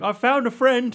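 very high, bright, cheerful, innocent voice.

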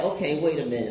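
ordinary talk, nothing marked

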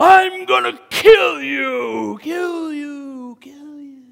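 very high, very loud, shrill, echoing, "you" drawn out. The speaker acts out the Philistine giant threatening across the valley: giant's echoing shout. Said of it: "I'm sure he used the echo that ran across that valley".

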